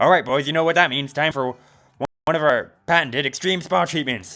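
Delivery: aggressive fast-talking jock voice. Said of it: "that's kind of the voice I gave to the wolf pack".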